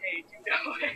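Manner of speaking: loud, creepy man's voice calling out. Retelling a stranger who came up asking directions: imitating a creepy man's voice. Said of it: "in that kind of voice".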